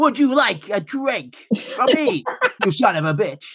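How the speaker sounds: put-on very high, swooping old dubbed anime voice. Showing a chat-up technique, pretending to be an old dubbed manga cartoon. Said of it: "I just pretend I'm an old dubbed manga cartoon".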